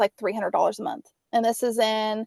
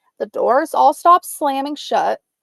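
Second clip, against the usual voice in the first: usual speaking voice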